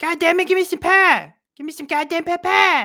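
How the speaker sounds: very high, loud, swooping sing-song cartoon voice. Recalling doing it with friends in high school, the Cartman voice. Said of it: "doing the Cartman voice".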